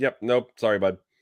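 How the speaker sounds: ordinary delivery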